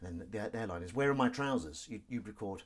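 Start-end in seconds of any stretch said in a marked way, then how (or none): none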